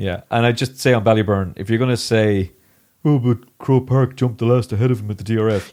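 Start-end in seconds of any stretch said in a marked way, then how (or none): 3.0-5.7 put-on teenage-girl voice. Discussing horse racing, voicing an imagined objection in a put-on teenage-girl voice. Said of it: "You sound like my teenage daughter when you do that voice".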